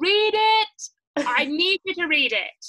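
put-on insistent shouting, loud, each word very slow. Retelling dropping off a book for a friend, retelling own shouting. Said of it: "I literally was shouting".

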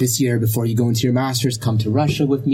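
ordinary talk

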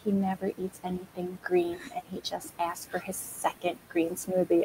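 very quiet, hushed half-whisper. Retelling what a mom half-whispered about her son: imitating a half-whisper. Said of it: "the mom whispered".

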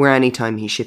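plain

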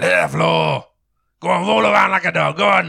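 very gruff, rasping, creaky high voice. Game master voicing someone heard from the direction of a doorway: very gruff voice. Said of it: "you actually hear this very gruffy voice".

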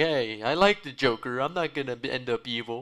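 mock angry, slow yelling. Mocking angry fans who defend a villain: imitating angry neckbeards yelling. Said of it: "a lot of angry neckbeards being like".

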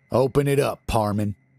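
ordinary delivery

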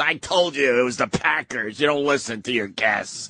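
put-on angry, scolding celebrity-style voice. Retelling how a guest got mad at them: imitating Denis Leary getting mad. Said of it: "Got all mad at us".

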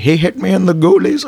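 very high-pitched put-on Indian accent. Quoting what the speaker's grandpa says, in an indian accent. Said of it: "Especially with an Indian accent".

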